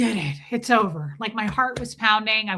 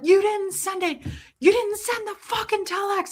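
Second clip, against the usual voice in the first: mock enraged, furious, very high, shrill scream; 11 semitones higher than usual. Retelling a friend shaking them over an unsent telex: imitating someone screaming furiously. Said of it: "He's screaming".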